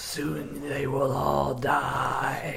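soft serpentine hiss, stretching out the word "die". Narrating a game turn as the player is dragged to a cliff edge, hissing. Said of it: "and it's hissing".

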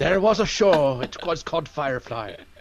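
British Scottish accent. Starting a ghost story about a cancelled tv show, in a scottish accent. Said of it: "do it in a British Scottish accent".

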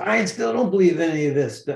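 mock high-pitched yelled outburst of disbelief. Retelling what a lady yelled back: imitating someone yelling. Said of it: "And she yells".

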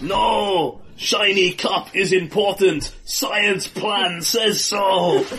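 goblin voice with a long, drawn-out "no". In a dice game, the narrator voices Boris leaping after the goblet, in Boris goblin voice. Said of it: "Boris leaps after the goblet".

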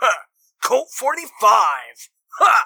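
very loud, high-pitched, obnoxious boastful tone. Describing a gun-covered character showing off each of his guns, loud boasting. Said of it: "he's just loudly boasting".

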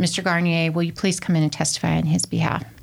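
ordinary talk

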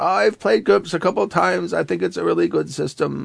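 put-on high-pitched, slightly creaky New York accent. Retelling what a gaming friend said: imitating Stevie's high voice and New York accent. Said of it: "He talked like this".

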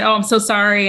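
plain

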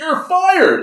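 mock very high-pitched, shrill shout. Retelling a story where a guy runs away after being bitten, retelling a yell. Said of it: "the guy runs away and yells".

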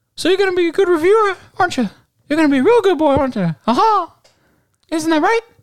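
very high, very loud, shrill cartoon mouse voice. Acting out Mickey knocking on a reviewer's door, in Mickey Mouse voice. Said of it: "Mickey comes, like, knock on her door".

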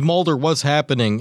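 ordinary talk

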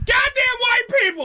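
words screamed loudly at full volume. Showing someone how to scream off mic: screamed loudly.

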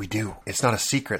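hushed whisper. Podcast host giving an announcement before the episode starts, whispering. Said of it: "so I don't know why I'm whispering".

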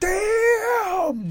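shrill, very high-pitched, stretched-out yell. Telling a friend how they reacted alone in their apartment: retelling a Chris Tucker-style yell. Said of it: "Did you yell at Chris Tucker style?".

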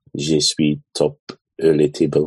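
put-on French accent. Answering a question about an accent: put-on french accent. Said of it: "in, like, a French accent?".

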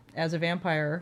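ordinary talk

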